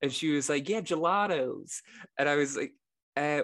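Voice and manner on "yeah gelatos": put-on American accent, pitched up. Retelling what an American who came in said to them; American accent. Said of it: "I'll do the accent".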